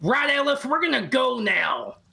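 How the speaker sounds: very high, loud calling out. A character in a game scene calls out into the cavern, calling out into a cavern. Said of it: "Calling out into the cavern".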